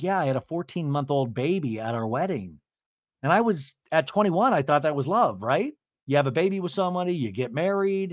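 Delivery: normal talking voice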